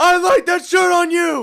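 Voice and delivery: high, loud, slow mock scream.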